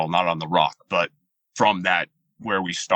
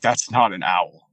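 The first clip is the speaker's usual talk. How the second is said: usual speaking voice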